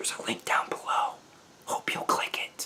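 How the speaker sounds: barely voiced, very soft, hushed whisper. A video host wrapping up for viewers, whispering. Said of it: "I don't know why I'm whispering".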